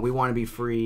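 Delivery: normal talking voice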